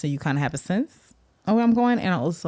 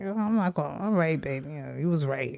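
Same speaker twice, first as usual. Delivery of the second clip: play-acted, modest, humble little tone; 4 dB quieter than usual. Imitating the other speaker admitting being wrong: imitating partner's modest admission. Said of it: "in a modest, like".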